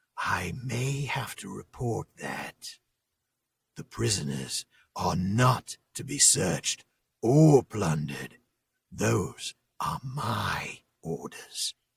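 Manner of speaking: soft, sinister sneer. Reading aloud a guard warning about searching prisoners: soft evil sneer. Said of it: "sneered a voice, softer than the others, but more evil".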